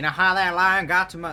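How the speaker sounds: put-on Australian accent. Speaking in character to Lizzie: put-on Australian accent. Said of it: "in the same Australian accent as before".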